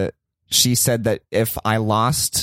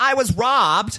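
play-acted very high, too-loud voice; 12 semitones higher than usual. Retelling reporting a robbery while trying to seem sober: imitating own overly loud voice. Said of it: "I was speaking really loudly".

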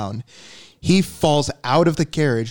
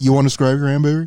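imitated yelling. Retelling a game moment where another player yells: imitating someone yelling. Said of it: "and he yells".

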